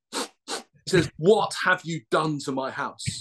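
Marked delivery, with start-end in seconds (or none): 1.1-3.2 mock-stern man's voice. Retelling what the stern guy said on getting back from work: imitating a stern man. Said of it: "the stern guy walks in".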